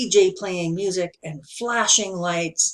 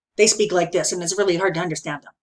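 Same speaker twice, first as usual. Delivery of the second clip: very fast, rushed, tumbling, rattled-off speech. Speaker demonstrates a very fast speaking rate: very fast speech. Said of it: "speaks at a very fast rate".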